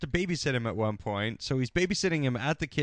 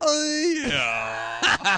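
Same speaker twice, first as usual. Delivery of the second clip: utterly unbothered, bored, loud and high-pitched; 10 semitones higher, 5 dB louder than usual. Retelling a movie scene where he responds to being shot: bored Burt Reynolds impression. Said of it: "He's so bored".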